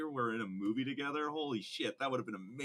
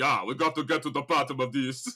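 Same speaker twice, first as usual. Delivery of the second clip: very loud, big, booming voice; 10 dB louder than usual. Describing a crime scene with Arnold Schwarzenegger: Arnold Schwarzenegger voice. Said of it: "Arnold Schwarzenegger's like".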